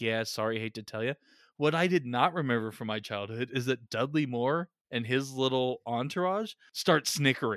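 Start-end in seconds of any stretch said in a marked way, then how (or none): 0.0-1.1 put-on murmuring elf voice, lower. Retelling how the elves tell Santa the news: imitating elves murmuring. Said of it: "they're kind of murmuring it like".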